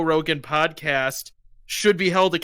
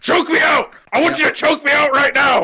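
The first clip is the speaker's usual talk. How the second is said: shrill, very high, loud aggressive screaming; 10 semitones higher, 7 dB louder than usual. Retelling a part of an interview, imitating Alex Jones screaming at a guy. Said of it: "Alex Jones starts screaming at that guy".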